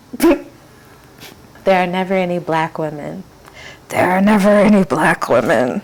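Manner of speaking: slow, loud, carrying stage whisper. Speaker criticizing documentaries about sex work, loud whisper. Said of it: "[whispering loudly]".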